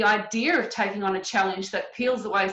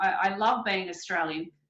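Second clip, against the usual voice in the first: plain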